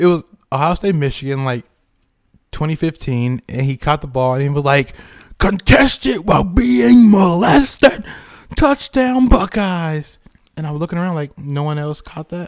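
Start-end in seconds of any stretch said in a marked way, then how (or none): 5.4-10.2 very high, very slow, loud, drawn-out announcer call. Retelling what a football announcer said after a touchdown: imitating a sports announcer's call. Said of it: "the announcer".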